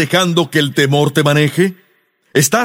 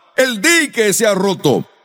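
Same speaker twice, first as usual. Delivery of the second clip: plain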